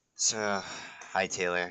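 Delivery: glum, sad, downcast small voice. Greeting another player who just joined after losing: sounding sad. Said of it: "Don't sound so sad".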